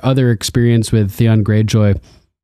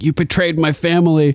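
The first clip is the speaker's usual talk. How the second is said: sudden, high, freaked-out outburst; 5 semitones higher than usual. Recapping a show scene where a tortured character confronts another, imitating someone freaking out. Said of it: "she kind of freaks out on him".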